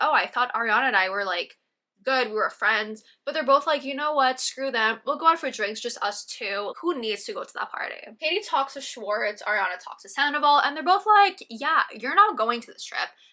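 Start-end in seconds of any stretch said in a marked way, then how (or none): none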